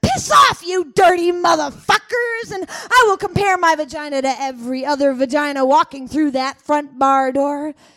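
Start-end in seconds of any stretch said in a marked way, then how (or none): 0.0-2.5 angry, furious roaring voice. Acting out a reply to the suitors, roaring back. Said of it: "will roar back at them".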